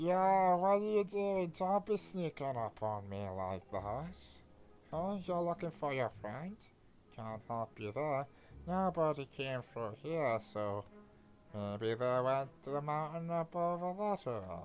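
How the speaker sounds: deliberately awful-sounding, horrible, ugly character voice. In a game stream, a character speaks to the player: horrible voice. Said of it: "He's hoping everything's okay. / His voice is horrible".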